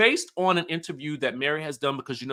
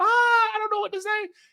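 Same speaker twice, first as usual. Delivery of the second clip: mock very high voice, giggling through it. Retelling how onlookers reacted to an awkward remark: imitating someone giggling.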